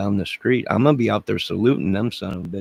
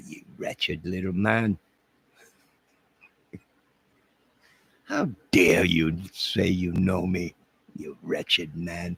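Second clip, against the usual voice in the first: fake English accent, quieter; 2 semitones lower, 5 dB quieter than usual. Scolding a chatter who called the speaker BG, in a mock English accent. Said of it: "what do the English say?".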